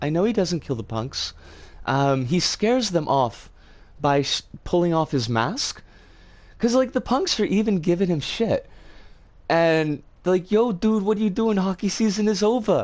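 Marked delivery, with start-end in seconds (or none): 10.5-12.8 half-put-on New York street punk accent. Retelling a movie scene, voicing the punks in a semi-new york accent. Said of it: "so they need to have like a semi-New York accent".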